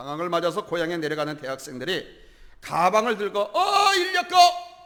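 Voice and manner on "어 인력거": high, loud calling out. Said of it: "이렇게 불렀습니다".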